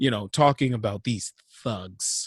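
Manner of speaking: low, hushed, sneering entitled-sounding voice.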